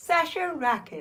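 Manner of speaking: bright, sunny tone. Saying their own name as part of a bit, cheerily. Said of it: "I'll say my name cheerily".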